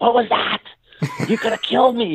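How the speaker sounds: very high-pitched, screamed outcry. Recounting screaming at him after his shot missed the net: retelling a scream at him. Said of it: "I'm screaming at him".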